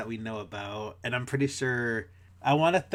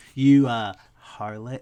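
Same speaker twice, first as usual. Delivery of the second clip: put-on dirty talk voice, louder; 8 dB louder than usual. Imagining how a character would talk dirty: Sax talking dirty. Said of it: "his dirty talk would be like".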